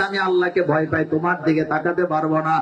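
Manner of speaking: ordinary talk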